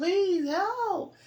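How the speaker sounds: very high, shrill, very loud pleading scream. Telling about being attacked in an alley, retelling her own screaming. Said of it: "I'm screaming".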